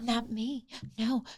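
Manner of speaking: very quiet, barely audible half-whisper. Retelling a cast member's reply at a reunion: imitating Priyanka half-whispering.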